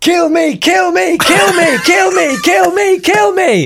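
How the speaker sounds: put-on very high, drawn-out, desperate dog voice, shouting. Speaker imagines what a barking little dog on a lead is saying, voicing a dog's desperate shouts. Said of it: "they're just shouting".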